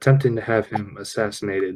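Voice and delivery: voice brought down a touch. A player speaking in character to another character, in a lowered voice. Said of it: "I kind of like lower my voice a little bit".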